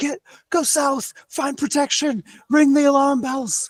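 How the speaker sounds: very high, loud yelling. A player voicing her character, the leader, directing civilians during an attack, yelling out orders. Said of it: "she's just yelling out orders".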